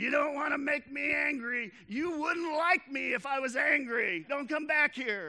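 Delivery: emboldened, shrill, very high, very loud scream. Retelling what the speaker's reluctant buddy yelled at someone, retelling a yell. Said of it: "And he yells".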